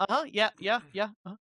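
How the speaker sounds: distracted autopilot tone. Imitating a listener half-hearing a story: imitating someone spacing out. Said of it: "spacing out and then coming back to it".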